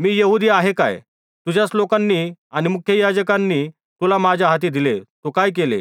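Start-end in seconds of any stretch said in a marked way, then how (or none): none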